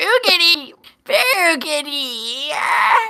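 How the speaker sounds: put-on high-pitched old man voice. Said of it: "Did you just say with that voice".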